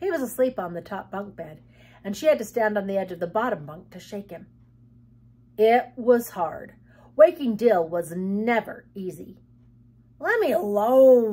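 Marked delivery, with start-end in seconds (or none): 10.2-11.3 loud growl, dismissive, the word "alone" drawn out. A sleeping boy being shaken awake on the top bunk, growled. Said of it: "he growled".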